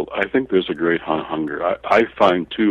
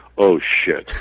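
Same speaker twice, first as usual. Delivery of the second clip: mock muttering under the breath. Retelling a classmate's reaction in class: imitating someone muttering under breath. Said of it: "under her breath saying".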